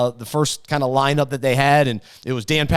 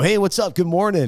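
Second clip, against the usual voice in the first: on-air radio announcer host delivery; 4 semitones higher than usual. Recalling when a host said good morning to him, the speaker repeats his reply: radio voice. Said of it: "somebody brought his radio voice".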